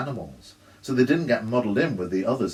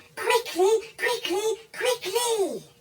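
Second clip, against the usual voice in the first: tiny squeaky voice, very high, yelled. A small creature riding down the wall yells at the narrator: squeaky little voice yelling. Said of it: "It yelled at me in its squeaky little voice".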